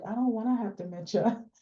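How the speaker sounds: mock, deeply sad, sorrowful voice. Retelling what a woman said after hearing her diagnosis, imitating a very sad voice. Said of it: "in the most like saddest voice".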